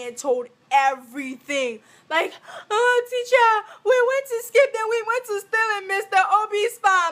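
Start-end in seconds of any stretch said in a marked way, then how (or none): 2.7-7.1 high, loud bawling and wailing through tears. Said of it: "she started bawling out, crying".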